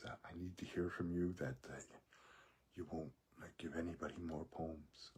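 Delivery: mimicked whisper. Retelling what a man said to the speaker about a poem, imitating a whisper. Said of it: "he's whispering".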